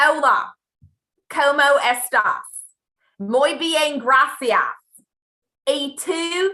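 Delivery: loud, high Texan Southern accent on Spanish. Asked to show how it sounded: Spanish with Southern US accent. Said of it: "I spoke Spanish in a southern accent".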